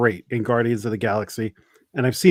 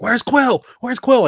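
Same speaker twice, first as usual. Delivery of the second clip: very high-pitched, panicked calling voice; 12 semitones higher than usual. Retelling a movie scene where a character fears his friend is dead: imitating Dave Bautista freaking out. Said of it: "freaking out that his friend is dead".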